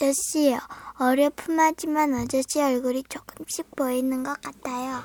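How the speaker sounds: ordinary delivery, nothing marked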